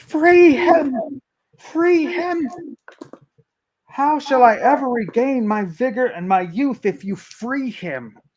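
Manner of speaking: very high, loud, enraged, furious shriek. Narrating a game, the speaker voices a character screaming as others try to free a prisoner.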